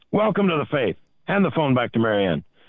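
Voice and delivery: very loud booming voice. Retelling a phone call where a half-deaf priest speaks: imitating Father Joe talking very loudly. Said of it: "he talked like everybody else was going deaf".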